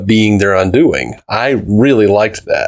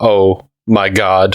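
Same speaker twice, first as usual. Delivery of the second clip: mock-dejected robot voice, lower, much slower. Retelling a Rick and Morty scene to a friend, in a dejected Butter Robot voice. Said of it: "he just drops his head and goes".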